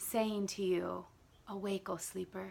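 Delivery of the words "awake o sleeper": soft, gentle, tender voice, quieter. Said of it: "gentle voice".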